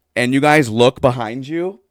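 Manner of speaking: plain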